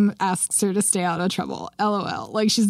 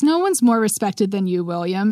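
ordinary delivery

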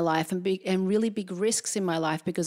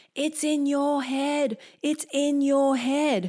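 high, stretched-out, drawn-out shouting; 7 semitones higher than usual. Retelling a brother spotting a dart in the head: imitating a yell. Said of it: "he starts yelling".

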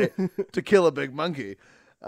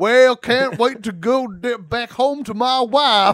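very slow, bad put-on Southern drawl; 7 semitones higher, 8 dB louder than usual. Imitating an actor's put-on Southern accent from a movie. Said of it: "a guy in an improv scene playing a, a Southerner".

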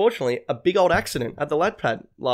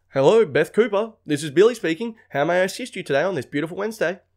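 fake, over-polite customer-service tone; 3 semitones higher than usual. Mocking how people talk at work: mocking fake work politeness. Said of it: "people are one way at work".

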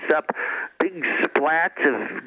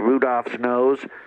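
usual speaking voice

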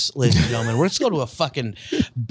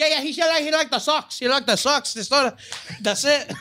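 put-on high-pitched Dominican accent. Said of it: "I don't know what accent that was".

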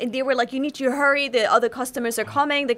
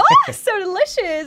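forced, fake delighted gush, phony cheerful; 9 semitones higher, 5 dB louder than usual. Retelling having to eat intestines on camera: retelling a forced big smile. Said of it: "with the biggest smile on my face and go".

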